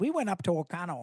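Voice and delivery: put-on thick, heavy Wisconsin accent. Teasing a co-host about how she says a town's name, in a thick Wisconsin accent. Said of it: "you say that with a very thick Wisconsin accent".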